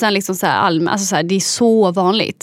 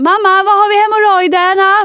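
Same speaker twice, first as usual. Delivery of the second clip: mock shout, much higher and slower; 11 semitones higher, 6 dB louder than usual. Recalling being new at a pharmacy, re-enacting shouting to the boss, retelling own past shout. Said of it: "Så skrek jag så här".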